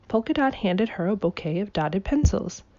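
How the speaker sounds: ordinary delivery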